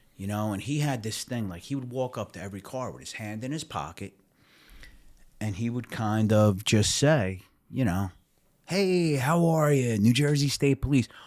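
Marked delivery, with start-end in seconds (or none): 8.7-11.1 friendly, happy, slightly higher-pitched voice. Retelling how a state trooper greeted drivers, imitating his friendly, happy tone. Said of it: "All friendly and happy all the".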